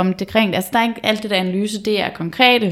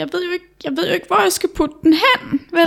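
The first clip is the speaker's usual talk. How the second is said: acted-out sobbing, high, tearful crying speech; 9 semitones higher than usual. Retelling a story, the speaker acts out a girl talking to her mother, imitating a girl crying. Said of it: "og grædende sådan".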